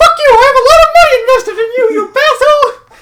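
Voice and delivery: high, loud squeaking voice. Speaker curses someone out in a Mickey Mouse voice. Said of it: "doing the Mickey Mouse voice".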